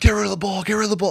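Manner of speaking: mock coach barking, high, repeated yelling. Retelling a coach yelling in his ear during a test: imitating someone screaming. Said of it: "He just starts fucking screaming at me".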